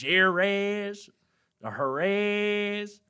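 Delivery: very high, loud, slow put-on Southern twang. Pronouncing a place name real southern like, put-on Southern American accent. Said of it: "let me say it real southern like".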